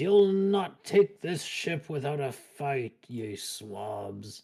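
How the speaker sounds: in-character pirate voice, "swabs" drawn out. Voicing an enemy who shakes his rapier at the party: voicing a rapier-waving enemy. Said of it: "shakes his rapier at all of you and says".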